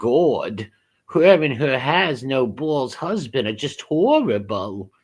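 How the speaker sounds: New York way of talking. Speaker voices a remark aloud, in a new york accent. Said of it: "That's New York accent".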